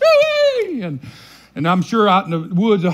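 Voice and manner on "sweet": very high, hog-calling cry. Retelling how Papa called hogs from the woods: imitating Papa's hog call. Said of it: "you know, like that".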